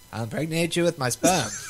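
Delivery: high, cartoonish Canadian accent. Trying a Morgan Freeman impression for the others, in a South Park Canadian voice. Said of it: "You sound like a South Park Canadian".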